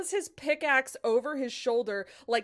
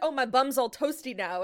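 ordinary talk, nothing marked

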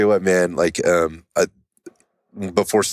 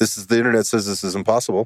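higher-pitched sarcastic tone. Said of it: "I'm being sarcastic".

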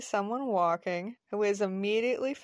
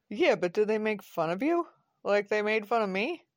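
ordinary delivery

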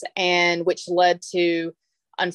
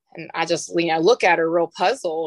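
normal talking voice

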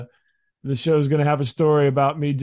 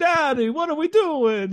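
very high, sing-song little Italian man voice; 14 semitones higher than usual. Father imitates his son as a toddler, talking like Mario. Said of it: "talked like Mario or a little Italian man".

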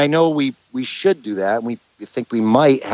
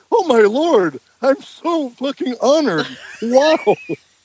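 very high, phony starstruck gushing gratitude; 14 semitones higher than usual. Speaker mocks a man acting honored by paid-for attention, with mock fake gratitude. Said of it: "But you're trying to act like".

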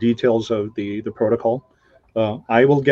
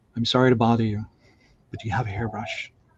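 put-on soft, hushed little-girl half-whisper; 7 dB quieter than usual. Telling a story about a cave, voicing the girl heard in her ear: young girl's half-whisper. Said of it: "she heard a young girl's voice whisper in her ear".

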